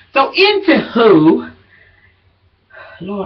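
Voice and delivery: out of breath, winded. Back after a break, talking to viewers in a video, out of breath. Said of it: "I am really out of breath".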